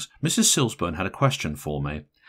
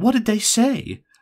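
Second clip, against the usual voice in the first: very high-pitched, impatient; 12 semitones higher, 4 dB louder than usual. Mrs. Silsburn questions the matron of honour: asking impatiently. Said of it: "she asked impatiently".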